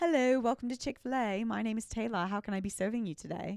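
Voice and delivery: put-on British accent. Recalling greeting customers at Chick-fil-A, a fake British accent. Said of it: "she British?".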